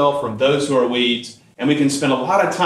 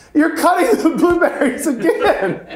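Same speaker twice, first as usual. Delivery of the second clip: very high, acted, disbelieving angry laugh through words. Retelling the priest catching the cutting again: imitating incredulous angry laughing. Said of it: "kind of the incredulous, like, anger laugh".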